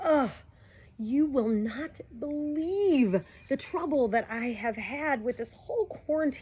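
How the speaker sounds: talking in a high grandma voice. Talking to viewers about moving with their device, in a grandma voice. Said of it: "I'm going to speak like a grandma".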